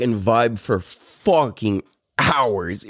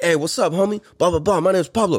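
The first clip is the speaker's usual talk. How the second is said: put-on hard, tough tone, higher pitch; 4 semitones higher than usual. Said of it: "he hit me up like that too".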